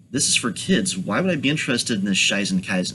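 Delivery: plain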